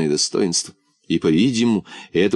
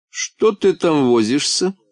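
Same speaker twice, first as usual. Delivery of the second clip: threatening, menacing tone; 6 semitones higher than usual. A lady questions a man fumbling with his collar; threatening tone. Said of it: "В голосе дамы звучала угроза".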